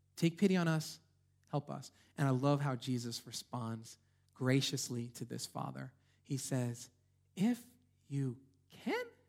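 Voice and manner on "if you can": voice climbs up on can. Quoting a reply to a pleading father, rising pitch on can. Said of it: "I think his voice went up there too".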